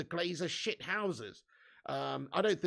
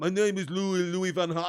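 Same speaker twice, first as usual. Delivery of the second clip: put-on character voice, faltering, losing grip on it; 7 dB louder than usual. Trying the impression again: Louis van Gaal impression. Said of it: "I can't do it anymore".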